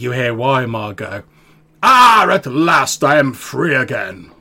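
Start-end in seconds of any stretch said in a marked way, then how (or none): 1.8-4.1 strange, very loud booming voice, very slow, drawn out. Voicing a presence speaking through Weimar, in a strange voice not his own. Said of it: "in like a voice that's entirely not his own".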